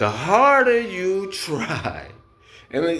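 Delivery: slow speech, laughing through the words. Teaching viewers the basics, laughing at themselves while talking. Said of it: "excuse me for laughing".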